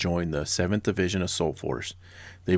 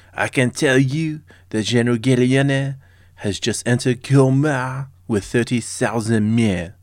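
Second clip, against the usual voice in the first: booming, loud, high, fake put-on French accent; 5 semitones higher, 8 dB louder than usual. Quoting a historical line to evoke a Paris cafe, put-on French accent. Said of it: "I'm going to try to say this with a French accent".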